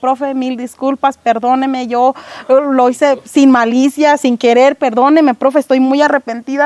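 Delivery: ordinary delivery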